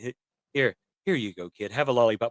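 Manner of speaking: awkward put-on old man voice. Imitating an awkward old man offering a kid a lollipop: awkward old Zuko impression. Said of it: "it would be kinda funny if he gave".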